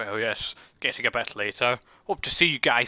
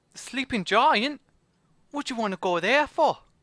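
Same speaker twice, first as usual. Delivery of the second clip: put-on very high Cockney accent over a Scottish accent; 11 semitones higher than usual. Voicing a character asked where the sleeping giant is: scottish person trying to do cockney. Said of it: "a Scottish person trying to do Cockney".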